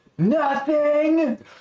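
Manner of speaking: distinct lilting inflection on the word "nothing". Retelling how an uncle called out after a crash: imitating uncle's "Nothing!" inflection. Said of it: "just that inflection".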